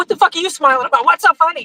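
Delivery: high, pissed-off, hostile, angry outburst. Retelling how a woman at the gym reacted to a smile: imitating an angry woman. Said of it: "she got so pissed off".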